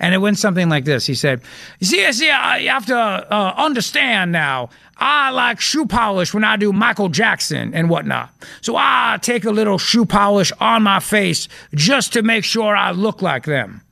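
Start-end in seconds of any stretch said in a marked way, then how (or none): 1.8-13.7 stumbling, halting, hedging politician voice. Retelling the governor explaining himself at a press conference: imitating the governor's voice. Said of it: "That's literally how he sounds".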